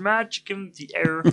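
high, froggy frog puppet character voice. Prompted by the other speaker, doing a Kermit the Frog impression. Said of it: "do your Kermit".

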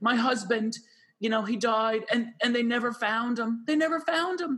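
put-on sobbing, high, tearful crying speech. Retelling a caller on Montel asking about her lost husband, imitating a woman crying. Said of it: "And she's crying".

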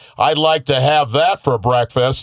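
put-on cheesy, corny old-timer man voice.

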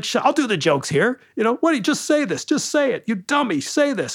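agitated, worked-up, high-pitched, exasperated rant. Describing a comedy album where the comic brings two guys onstage: imitating him getting worked up. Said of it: "He gets all worked up".

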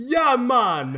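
very high, all-out, top-of-the-lungs yell, acted out. Recalling a scene very late in the movie, do a John Candy yelling impression. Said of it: "John Candy yells at the top of".

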